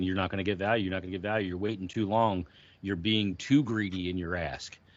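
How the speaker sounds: ordinary delivery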